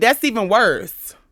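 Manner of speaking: normal talking voice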